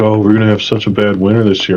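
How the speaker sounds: ordinary delivery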